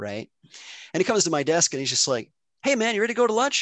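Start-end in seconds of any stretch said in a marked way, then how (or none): 2.6-3.6 put-on light, offhand, breezy, very high voice. Speaker retells a man coming to their desk after upsetting them: mimicking breezy, like nothing happened. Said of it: "Like nothing happened".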